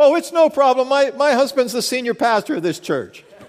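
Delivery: put-on real loud voice, pitched very high. Retelling his wife's answer to the police at the dumpster, in a real loud voice. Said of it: "in a real loud voice".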